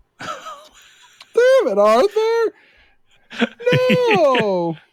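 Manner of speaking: very high cracking voice, no drawn out. Doing an impression of Dutch after being told to add the cracked voice: Dutch impression with cracked voice. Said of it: "the cracked voice thing".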